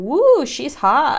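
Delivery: smitten, high, loud reaction.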